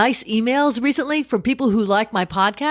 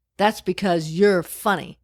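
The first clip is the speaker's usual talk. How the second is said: very quiet, aside-like voice; 5 semitones lower than usual. A performer retells what a front-row audience member said, retelling a very quiet remark. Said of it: "in a very quiet voice that only I could hear".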